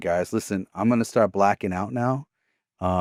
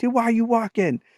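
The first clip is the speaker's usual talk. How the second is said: mock, very high-pitched, urgent holler; 14 semitones higher than usual. Retelling how everyone called out to a friend after a car wreck: imitating people yelling. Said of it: "everybody's yelling at him like".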